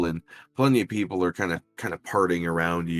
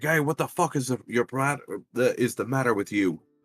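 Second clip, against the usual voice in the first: put-on angry outburst; 6 semitones higher than usual. Retelling how a guy got tripped and stood up already pissed, acting out his anger. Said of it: "is already pissed and like".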